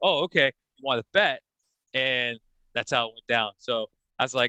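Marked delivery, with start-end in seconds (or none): none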